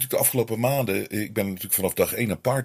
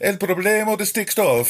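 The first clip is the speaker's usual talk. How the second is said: put-on Italian accent, much higher and slower; 11 semitones higher, 5 dB louder than usual. Imagining opening newspapers abroad, Italian accent. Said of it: "Ik weet niet waarom ik een Italiaans accent praat".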